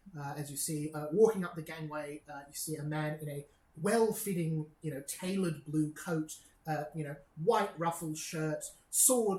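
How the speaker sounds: usual speaking voice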